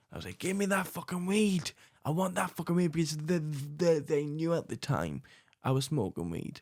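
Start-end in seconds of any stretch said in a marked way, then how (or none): 0.4-2.9 half-shouted, yelling held back and reined in. Retelling shouting back at an uncle who was shouting, retelling own shouting. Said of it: "so I started shouting even louder".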